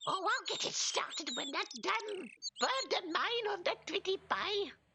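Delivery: put-on quirky elderly woman voice. A streamer imitates a kooky granny nattering away: kooky old Granny voice. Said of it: "a kooky old granny sitting there nooting away going".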